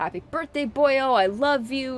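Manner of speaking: put-on affectionate delivery. Quoting what he said on stream, imitating an affectionate tone. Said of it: "he put his affections into it".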